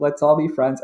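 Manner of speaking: plain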